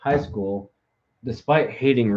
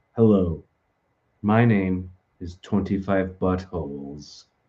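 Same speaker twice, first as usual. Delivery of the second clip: automated robotic text-to-speech computer voice; 3 semitones lower than usual. Speaker shows how content sounds with an automated chat voice. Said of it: "uses like the um automated chat voice".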